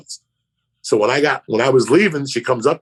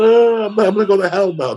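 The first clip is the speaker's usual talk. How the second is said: mock sobbing, high-pitched, weepy, tearful delivery; 8 semitones higher than usual. Retelling how a girl cries about going to hell: imitating someone crying. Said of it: "They're crying, like".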